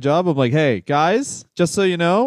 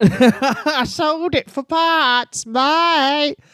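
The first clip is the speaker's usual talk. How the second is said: put-on mixed Scouse Liverpool and Australian accent; 10 semitones higher than usual. Playing a dirtbag tenant answering about a missing wall, in a mixed Liverpool and Australian accent. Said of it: "Liverpool and Australian accent".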